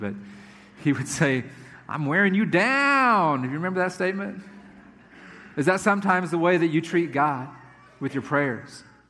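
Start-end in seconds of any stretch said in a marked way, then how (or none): 1.9-3.4 very slow, dorky, nerdy drawl, "down" stretched out. Talking to listeners about prayer, imitate a Family Matters character: Steve Urkel impression. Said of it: "I'll try to imitate him a little bit".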